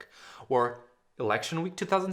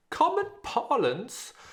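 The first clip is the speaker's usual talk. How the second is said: very high, bad, fake British accent; 12 semitones higher than usual. Explaining where the word snowflake came from, slipping into a bad British accent. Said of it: "(in a bad british accent)".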